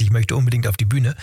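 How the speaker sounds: ordinary delivery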